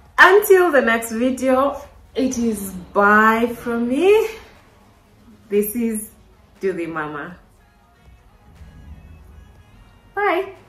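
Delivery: tearful, crying voice, through tears. Closing a video to viewers, the speaker signs off, tearful. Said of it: "I'm sorry for the tears".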